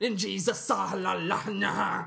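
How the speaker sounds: put-on Arabic-sounding accent, preaching delivery. Retelling a pastor getting fired up in church, Arabic-sounding preacher imitation. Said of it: "that sounded Arabic".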